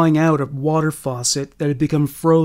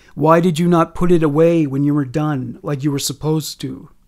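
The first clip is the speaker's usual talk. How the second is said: plain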